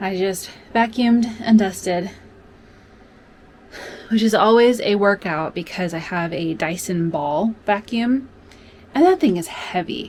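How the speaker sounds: breathless, slow and winded voice. Host, just back from vacuuming and dusting, speaks out of breath. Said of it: "I am out of breath".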